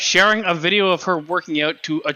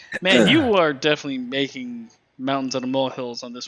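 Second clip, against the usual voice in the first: normal talking voice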